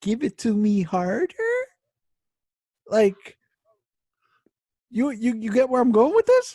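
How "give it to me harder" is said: harder said with a rising, question-like lift. Joking about whether question inflection carries into dirty talk: rising on harder, like a question. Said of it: "does the question inflection translate to their dirty talk? So it's like".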